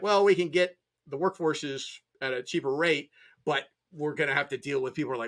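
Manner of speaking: ordinary delivery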